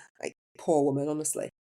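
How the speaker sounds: plain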